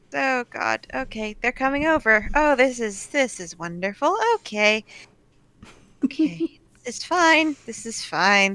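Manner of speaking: nervous character voice. Game narrator voicing Bondlock as someone is dragged over to him, nervous Bondlock voice. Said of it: "nervously patting his hands together and is just like".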